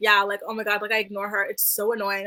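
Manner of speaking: ordinary talk, nothing marked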